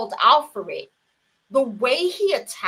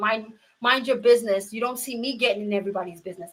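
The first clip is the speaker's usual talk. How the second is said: mock voice, raised, climbing in pitch, scolding. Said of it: "she starts raising her voice".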